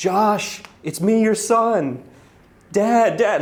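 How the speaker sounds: very high, very slow, drawn-out yelling. Retelling how a friend shouted at a saxophone player: imitating a friend screaming. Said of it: "He starts screaming".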